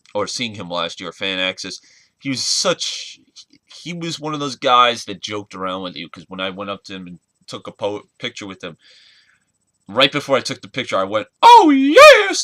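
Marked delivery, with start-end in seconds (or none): 11.4-12.4 very high, loud shriek, drawn-out, yes stretched out. Retelling greeting a wrestling manager at a photo: Paul Bearer impression. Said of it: "doing my perfect Paul Bearer impression".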